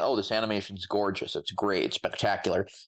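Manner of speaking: ordinary talk, nothing marked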